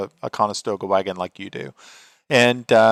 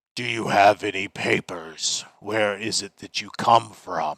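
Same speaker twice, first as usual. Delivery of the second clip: low growling under the breath; 4 dB quieter than usual. Voicing a hobgoblin guard asking for papers: growling under his breath. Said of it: "he just sort of growls under his breath".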